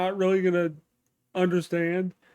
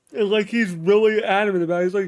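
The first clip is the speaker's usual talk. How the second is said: ordinary talk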